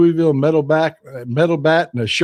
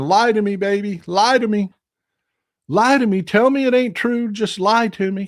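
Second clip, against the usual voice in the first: high, mild, play-acted pleading half-scream; 5 semitones higher than usual. Imitating Wall Street traders who are screaming: imitating traders screaming. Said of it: "traders on Wall Street that are just screaming".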